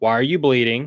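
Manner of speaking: put-on accusing voice. Retelling how his wife reacted to blood on his shirt: mock-accusatory question. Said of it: "In a very accusatory voice".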